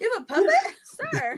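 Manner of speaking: high-pitched, loud, baffled outburst.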